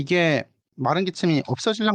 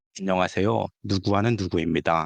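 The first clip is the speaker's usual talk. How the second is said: commercial announcer voice. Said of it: "라디오 광고 같아".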